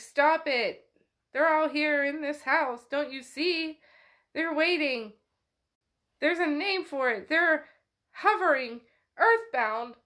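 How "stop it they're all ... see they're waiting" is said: mock, acted-out yelling. Retelling a story where a man yells at a woman shaking him; retelling a yell. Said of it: "He's like yelling".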